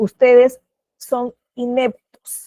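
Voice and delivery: slow, mock-elegant delivery.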